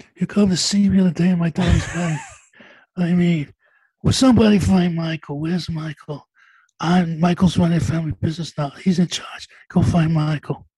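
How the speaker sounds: mob boss voice with lifted pitch. Doing his best and only impression, a Marlon Brando impression. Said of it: "That's my best. That's Marlon Brando".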